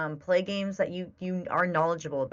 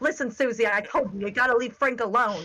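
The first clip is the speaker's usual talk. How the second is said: put-on scolding yell, voice pitched up; 6 semitones higher than usual. Retelling playing a dinosaur game, imitating own yelling at dinosaurs. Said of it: "I'm just yelling at my dinosaurs".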